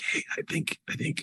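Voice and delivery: low, hushed, kept-down whisper. Speaker demonstrates how they talk aloud but whisper, whispering low. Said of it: "so you're just whispering kind of down low".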